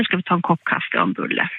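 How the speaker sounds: plain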